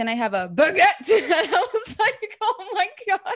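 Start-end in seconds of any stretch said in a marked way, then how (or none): 0.0-1.1 obnoxiously loud voice, getting louder. Retelling a man ordering a sandwich: obnoxiously loud voice. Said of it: "in a really loud voice".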